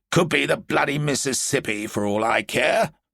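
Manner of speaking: blunt, bad-tempered, gruff, irritated snarl. Narrating a general answering his aide's remark about the river, General Barnes snarling. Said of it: "Major General [name] stamped his feet irritably. / [name], normally a good-tempered man, grunted. Like the men under his command, he was tired of the cold and of the endless rain. / Major General [nam".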